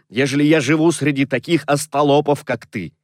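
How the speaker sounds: ordinary delivery, nothing marked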